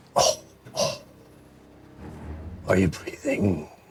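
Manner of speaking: deep, watery, ancient-sounding voice. A narrator voices a creature with glowing red eyes speaking to the listeners, deep, watery voice. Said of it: "A deep, watery voice speaks as if from the depths of time".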